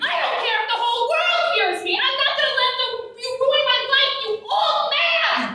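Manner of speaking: shrill, very high-pitched, angry yelling. Refusing to be quiet so others might hear, shouting. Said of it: "Please keep your voice down".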